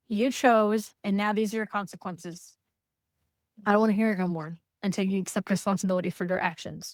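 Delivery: ordinary delivery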